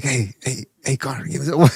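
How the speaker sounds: sneaky, secretive, hushed whisper under the breath. Mocking someone who whispers a request to Conor: imitating a whisper. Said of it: "why would he whisper like".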